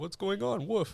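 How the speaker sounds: very high-pitched, pushy dog voice. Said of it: "I'll talk in the dog's voice".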